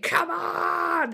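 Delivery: mock wild, high, fired-up yell, "on" stretched long. Retelling a cricket match moment: imitating Shane Warne yelling. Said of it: "he's yelling".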